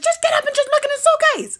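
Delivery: shrill, very loud, high-pitched, full-voice hollering. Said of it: "She started hollering at me".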